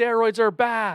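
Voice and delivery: high, slow drawn-out heckling yell. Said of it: "he yells".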